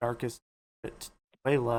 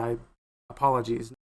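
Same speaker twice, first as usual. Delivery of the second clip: ordinary talk, nothing marked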